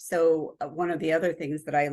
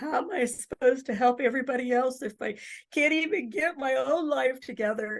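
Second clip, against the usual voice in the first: acted-out sobbing, high, tearful and overwhelmed; 9 semitones higher than usual. Retelling a stressed grad-school moment with a counselor, acting out crying. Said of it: "like crying".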